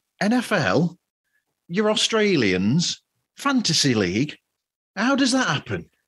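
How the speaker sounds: astonished, disbelieving, surprised tone with rising pitch. Reading a point from a bullet list as if surprised. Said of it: "shall I say this as if I'm surprised?".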